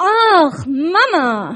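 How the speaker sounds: very loud, high, reproachful cry. Retelling her son's answer about school: mock-reproachful tone. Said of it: "Ich kann das nicht so gut, aber voller Vorwurf".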